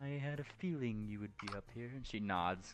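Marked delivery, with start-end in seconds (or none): 0.0-1.9 smug, wise sphinx voice. Voicing a sphinx who greets a player at the door: smug sphinx voice. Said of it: "looking wise and smug".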